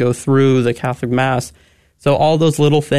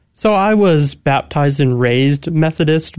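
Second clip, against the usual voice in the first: raised leaned on hard, slow overall. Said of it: "I'm putting a bit too much emphasis on raised".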